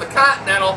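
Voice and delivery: normal talking voice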